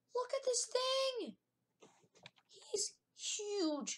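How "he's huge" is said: cracking, breaking exclamation with a voice crack. Showing a level 1 aerodactyl to viewers, voice cracking. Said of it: "I had a voice crack".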